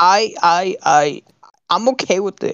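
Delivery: slow halting stutter. Imitating the other speaker's answer to call him a liar: mock stuttering. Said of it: "You're like".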